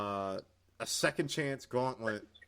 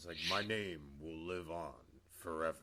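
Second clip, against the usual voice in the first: put-on deep, slow, hushed villain voice; 5 semitones lower, 9 dB quieter than usual. Describing how a man talks, imitating his very deep, slow voice. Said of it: "it's very deep, and he talks like this".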